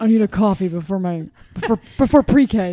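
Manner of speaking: put-on deep-voiced child voice. Picturing a coffee-drinking kindergartner, imitating a deep-voiced kindergartner. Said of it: "She has like a deeper voice".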